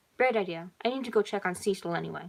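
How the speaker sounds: ordinary delivery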